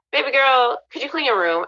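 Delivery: mock gentle, kindly, sweet voice. Retelling how dad could have asked nicely: imitating a nice request. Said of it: "You could have been nice".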